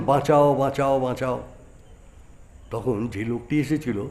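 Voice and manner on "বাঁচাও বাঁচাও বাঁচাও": ordinary delivery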